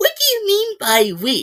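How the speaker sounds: put-on bratty, spoiled, very high little-girl voice. Quoting a show character's annoying line: imitating a spoiled little girl. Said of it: "She sounded like a spoiled little girl".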